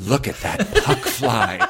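reverent, awed tone.

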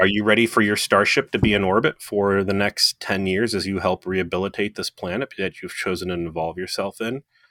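ordinary delivery

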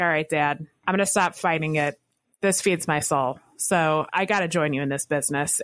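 normal talking voice

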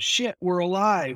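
put-on happy shout. Recapping a movie scene after an explosion, imitating Jimmy's happy yell. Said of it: "who yells out".

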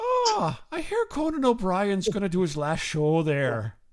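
chatty, lilting, sing-song put-on Irish accent. Retelling talking to the guy at the box office in an Irish accent. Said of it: "I start talking in an Irish accent".

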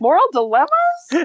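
very high shriek, rising at the end. Retelling what they scream at the screen: screaming with a rising question. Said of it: "screaming it with a question mark at the end".

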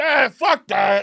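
squeaky, very high, dismissive brush-off tone. Imitating the wife's dad turning down an outing: imitating wife's dad. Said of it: "And he goes".

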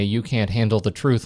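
ordinary talk

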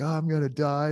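high, freaked-out, terrified, panicked blurt. Retelling the ambulance ride to the hospital, acting out own past panic. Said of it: "I'm freaking out".

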